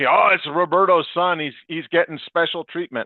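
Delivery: put-on, teasing, half-joking sarcastic tone. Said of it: "they say it in a joking way".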